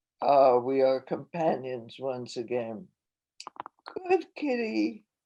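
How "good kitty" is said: put-on high, gushing baby-talk voice. Narrator speaking to the cat, in a baby voice. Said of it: "I say in my baby voice".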